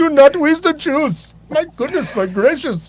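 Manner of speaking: bad fake Indian accent, high. Joining in after another speaker's impression, Indian accent impression. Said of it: "That's my Indian impression".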